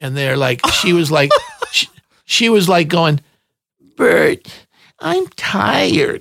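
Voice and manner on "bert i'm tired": put-on high, creaky little baby-talk voice. Retelling people accidentally caught on tape, the speaker imitates a woman's baby talk. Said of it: "they're like talking like baby talk".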